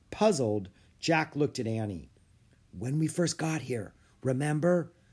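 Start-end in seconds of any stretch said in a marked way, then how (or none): 2.8-4.9 whispering, higher pitch. She reminds her puzzled companion in front of the emperor, whispering. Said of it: "she whispered".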